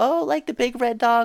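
put-on very high, teasing, taunting kid voice. Retelling how kids at school teased him: imitating kids taunting. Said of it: "kids in high school and kids in elementary used to be like".

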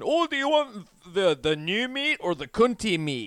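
acted Scottish voice, drawn out. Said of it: "or Scotland".

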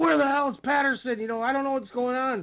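put-on high yell. Telling a story about a confused match, the speaker is retelling someone's yell. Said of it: "And he's yelling".

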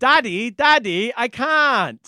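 put-on whiny British child, drawn-out can't. A speaker retells Natalie whining about things she wants; imitating Natalie's British accent. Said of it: "where does this kid have a British accent from?".

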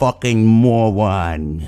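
slow, drawn-out delivery. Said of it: "this is the first time that you ever heard me do this, uh, impression".

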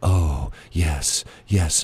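put-on calm, subdued, unexcited public-radio delivery. Describing how people on NPR must talk, doing an NPR voice. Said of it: "You have to talk in a voice like this. If you're on NPR, you can't sound excited".

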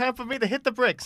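put-on inconsistent gnome accent. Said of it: "the most inconsistently accented gnome on the planet".

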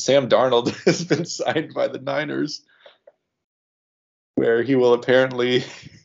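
words breaking up with laughs. Announcing a player signing to another speaker, laughing while talking. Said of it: "I can't even say it without laughing".

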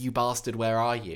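ordinary delivery

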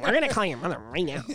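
put-on cartoon creature voice. Retelling what the school office lady said on the phone: Mike Wazowski voice. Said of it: "Does she sound like Mike Wazowski?".

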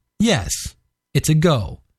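plain

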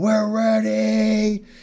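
high, slow, drawn-out shout. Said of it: "he's just gonna shout".

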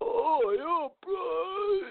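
very high-pitched, zombie-like voice. Recapping EastEnders, the speaker shows how bitten Mick now sounds: zombie Mick voice. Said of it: "He sounds like this".

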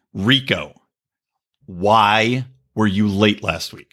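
mock, very slow, pointedly nasty tone, "why" drawn out. Re-enacting the tone used with his wife: a tone she doesn't like. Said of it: "Do you wanna hear the tone I used?".

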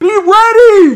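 shrill, very loud, high yell, ready drawn out. Retelling yelling at someone on a stalled elevator, retelling a yell. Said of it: "Yelling like".

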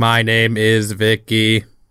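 very low, slow, flat, stilted deadpan robot drone. Recapping the robot Vicky speaking to the family at dinner: Vicky's stilted deadpan monotone. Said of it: "Vicky speaks in a stilted, deadpan, monotone voice".

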